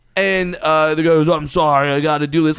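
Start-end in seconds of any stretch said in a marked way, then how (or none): none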